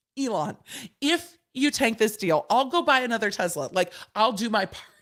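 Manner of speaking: tongue-in-cheek, facetious, sarcastic tone. Addressing Elon directly about tanking the deal: facetious and sarcastic. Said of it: "Me being totally facetious and sarcastic".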